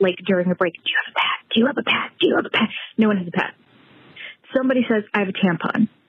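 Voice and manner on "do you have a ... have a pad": hushed, repeated words whispered under the breath. Retelling asking every girl in the cafeteria during a test break, retelling a whisper. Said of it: "I am whispering to every girl".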